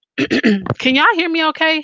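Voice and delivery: cracking voice. A livestream host checks whether viewers can hear, with a cracking voice. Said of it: "I know my voice is, is cracking and stuff".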